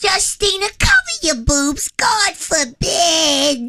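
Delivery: very high, sing-song, swooping grandmother voice. Describing family members, the speaker acts out the grandmother in a grandma impression. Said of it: "Then we had Nona".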